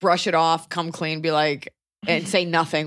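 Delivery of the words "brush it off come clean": plain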